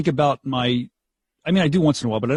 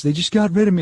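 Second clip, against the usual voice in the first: put-on near tears, higher, faster; 5 semitones higher than usual. Retelling what Jen Ryan said after being let go, imitating Jen Ryan almost in tears. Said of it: "almost in tears".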